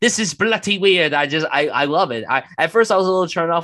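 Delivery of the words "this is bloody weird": put-on very strong Cockney accent, laid on, pitched up. Praising an actor's film accent, imitating Don Cheadle's Cockney accent. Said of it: "his very Cockney accent whenever he talks".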